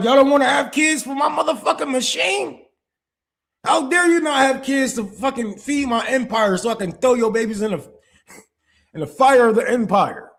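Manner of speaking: acted-out, very high, scolding, indignant tyrant rant. Mocking the government that wants people to have kids: mocking the government. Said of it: "They like".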